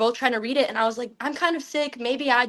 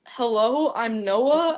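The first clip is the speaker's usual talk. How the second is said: put-on low, dropped deep voice. Retelling being asked to do a deep voice, trying one out: put-on deep voice. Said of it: "can you do a deep voice?".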